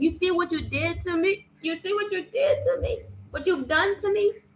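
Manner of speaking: put-on weeping, high tearful sobbing with accusing tone. Retelling what a woman said to the speaker, imitating someone crying. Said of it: "started crying and she said".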